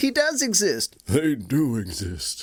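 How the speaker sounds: swooping, animated tv commercial voice. Chatting with a co-host, doing a favorite commercial: impression from a commercial. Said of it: "Your impression of that never gets old".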